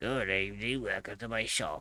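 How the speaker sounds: grumbling shop-owner voice. Game master voices the shop owner greeting players who walk in: grumbly shopkeeper voice. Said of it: "a grumbly voice greets you from behind the counter".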